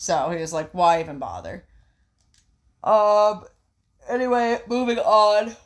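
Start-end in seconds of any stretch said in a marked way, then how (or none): 2.8-5.4 very slow words stretched through a yawn. Moving on from one story to the next, yawning while talking. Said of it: "Sorry, I'm yawning".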